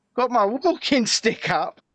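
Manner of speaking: ordinary talk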